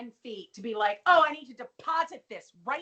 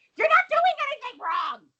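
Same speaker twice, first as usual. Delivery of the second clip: shrill, very high, loud screaming; 13 semitones higher, 6 dB louder than usual. Retelling a character's outburst in a scene: imitating a full Mrs. Garrett scream. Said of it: "She goes to full Missus Garrett".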